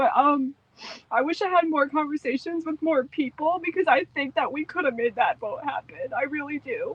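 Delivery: tearful, high-pitched voice, speaking through tears. Looking back on a vote that failed, crying. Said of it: "I'm crying now, so just let it happen".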